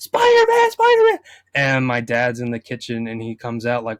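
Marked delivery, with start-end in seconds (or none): 0.0-1.2 put-on excited scream, higher and louder. Retelling seeing a Spider-Man trailer as a kid: imitating own childhood screaming.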